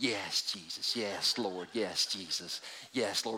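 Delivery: barely audible, hushed, slow murmur. Acting out a woman at the back of a prayer meeting: imitating a woman murmuring prayers. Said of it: "stands in the back with her arms over and going".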